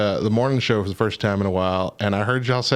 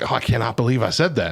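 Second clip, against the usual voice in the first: upset, distressed disbelief and dismay. Retelling how the former pastor reacted to his sermon slip: imitating Kevin Wellborn upset. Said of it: "he got really upset about it".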